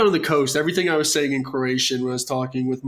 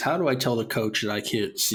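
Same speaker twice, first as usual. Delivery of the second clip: plain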